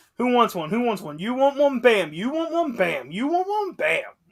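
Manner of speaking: acted cocky ringside taunting. Retelling a wrestler hitting move after move: imitating a wrestler taunting. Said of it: "He was just like".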